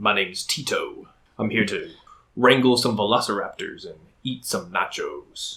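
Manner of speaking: deep, low goblin creature voice. Describing how Daniel voices Tito, the speaker does the deeper Tito goblin voice. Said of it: "he always brings in the deeper".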